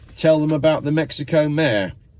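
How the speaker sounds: ordinary delivery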